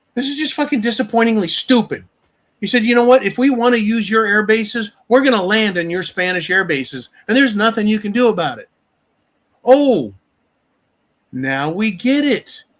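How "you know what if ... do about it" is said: smug, domineering, arrogant and bullying tone. Retelling a threat about landing on Spanish air bases: imitating an arrogant tone. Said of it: "in his fucking arrogance".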